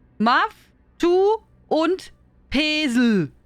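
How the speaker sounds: English words pronounced as German, very slow. Showing how an English phrase would be read by German rules, reading English as German. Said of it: "let me read it lo- like I would read German".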